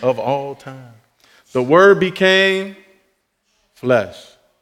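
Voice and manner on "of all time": soft, boxing ring announcer style call. Speaker praising a bible verse repeats the phrase like a boxing announcer. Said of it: "Have to say that like a boxing announcer".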